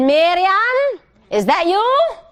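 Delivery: put-on heavy, thick Polish accent, very slow pace. Retelling what Eli said when the grandmother came in, imitating Eli's thick Polish accent. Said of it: "he had a thick Polish accent".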